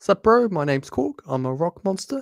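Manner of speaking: exaggerated New Zealand accent. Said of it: "it's a stereotypic Kiwi accent".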